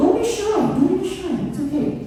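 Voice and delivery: very high, playful, gentle coaxing tone.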